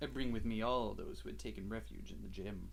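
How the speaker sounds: low, smooth, suave voice with easy delivery. Showing a partner how the character's line should sound: lowered, smooth, suave voice. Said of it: "He needs to sound a bit suaver. / lower your voice just a little bit. / I thought that was smoother".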